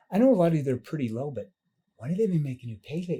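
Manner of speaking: caring, sympathetic, concerned, empathetic tone. Demonstrating how to ask a follow-up question: concerned, empathetic tone. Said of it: "See the concern tone, the tone that shows empathy".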